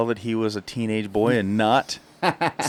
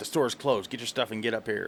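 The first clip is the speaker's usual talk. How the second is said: mimicked rude tone, quieter; 7 dB quieter than usual. Retelling what the store staff said at closing time: imitating rude store employee. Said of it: "And they were very rude".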